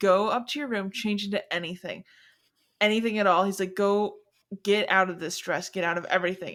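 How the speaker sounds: normal talking voice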